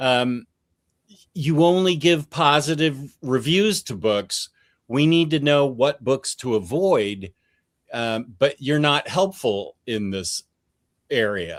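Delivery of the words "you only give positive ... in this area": ordinary talk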